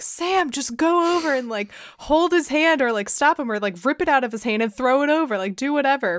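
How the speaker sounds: mild, rambling, run-on half-yell. Retelling reacting to a movie moment: imitating own past screaming. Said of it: "screaming, and I'm like".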